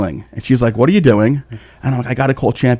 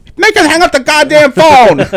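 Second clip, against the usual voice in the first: very high, shrill, loud screeching scream; 6 dB louder than usual. Retelling a woman screaming in the background of a phone call, retelling someone screaming. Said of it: "So she's screaming".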